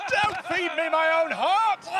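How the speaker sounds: very high, terrified, panicked screaming.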